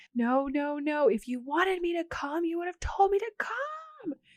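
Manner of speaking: very high, swooping, mock wailing scream-sob. Retelling a character's reply in a scene, imitating someone scream-sobbing. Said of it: "Nikki starts screaming and sobbing again".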